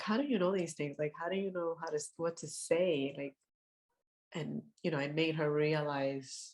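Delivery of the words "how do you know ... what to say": ordinary talk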